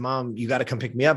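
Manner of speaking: ordinary talk, nothing marked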